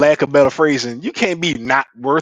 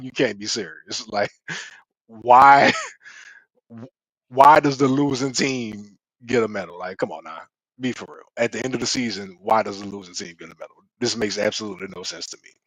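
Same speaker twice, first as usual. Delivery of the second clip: put-on stunned, dumbfounded, incredulous can't-believe-this disbelief; 4 semitones lower, 5 dB quieter than usual. Retelling own past words to a wife: retelling dumbfounded disbelief. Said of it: "with a dumbfounded look on my face".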